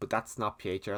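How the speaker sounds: usual speaking voice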